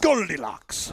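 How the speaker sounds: attempted put-on Russian accent. Repeating a word as an accent drill while being coached: attempted Russian accent. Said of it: "got to get more spit in there".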